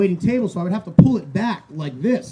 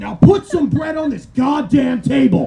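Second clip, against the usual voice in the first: put-on angry father voice, higher pitch; 5 semitones higher than usual. Doing an impression of Shirley Temple's dad scolding her: Shirley Temple's dad impression. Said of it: "This is my impression of Shirley Temple's dad".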